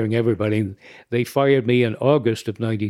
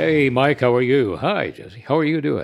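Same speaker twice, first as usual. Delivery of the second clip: golden, silky smooth voice; 2 semitones higher than usual. The announcer, just introduced, greets the two people who introduced him: classic golden voice. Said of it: "that classic golden voice".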